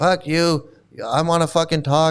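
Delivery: ordinary delivery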